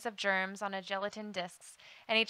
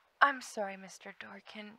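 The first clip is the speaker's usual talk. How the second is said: clear, sweet voice. Narrator reads a girl answering a man's reprimand, in a sweet, clear tone. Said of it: "she said in a sweet, clear tone".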